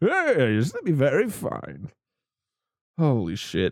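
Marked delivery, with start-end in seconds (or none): 0.0-1.9 high, swooping, swinging villain voice. Speaking a character's line while recapping the story, in a Bane voice. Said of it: "that's going to be his voice for the rest of this".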